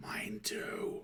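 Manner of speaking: high-pitched, unvoiced, mock stage whisper.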